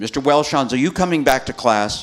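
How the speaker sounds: put-on furious shout, very loud. Retelling someone calling him back to class, imitating an angry voice. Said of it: "An angry voice".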